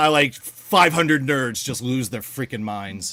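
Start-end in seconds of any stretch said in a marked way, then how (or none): none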